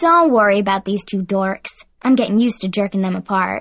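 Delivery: ordinary delivery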